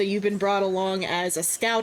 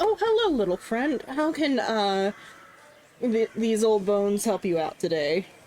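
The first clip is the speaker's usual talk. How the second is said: swooping, sing-song character voice, pitch up and down. Voicing a character at the bar greeting a player: voicing Lucas. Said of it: "Lucas looks down at you and is like".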